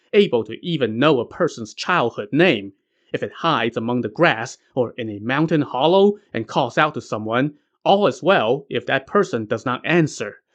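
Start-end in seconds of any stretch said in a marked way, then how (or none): none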